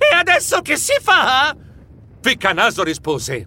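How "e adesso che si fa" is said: very high, drawn-out, desperate wailing shriek. Escaping through the tunnel onto the volcano, the narrator cries to Ficcanaso; shrieking desperately. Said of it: "strillai disperato".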